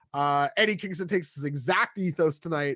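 ordinary talk, nothing marked

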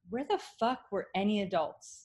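plain

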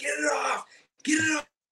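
terrified, frightened shriek, very high. Retelling the moment the thing latched on, re-enacting a frightened scream. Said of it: "I was just screaming".

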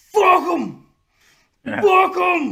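shrill, very high, booming, slow, drawn-out screaming. Telling a story about a line coach on the sideline, retelling a coach screaming. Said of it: "he's just screaming".

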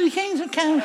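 timid, small, quiet, high mousy voice. Showing how not to shout that the kings are coming, small, mousy voice. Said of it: "let's not do like little mousy".

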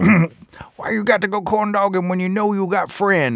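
homeless man voice. Recounting his act, the speaker does his homeless guy impression. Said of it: "when I imitate him".

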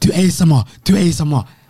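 loud, high-pitched call at full volume. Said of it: "That was the loudest my voice can go".

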